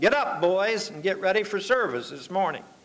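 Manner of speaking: usual speaking voice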